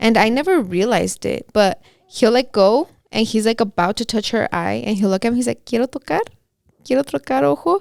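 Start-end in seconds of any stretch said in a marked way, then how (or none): 5.7-7.8 much higher pitch with rising, question-like intonation. Retelling how Franco asks permission before touching her eye, imitating Franco's questioning voice. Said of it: "he talks in a question".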